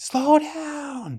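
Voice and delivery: mock shrill, very high panicked scream, falling, drawn out. Retelling a speeding car ride, the passenger acts out screaming at the driver. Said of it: "Now I'm screaming like a little girl".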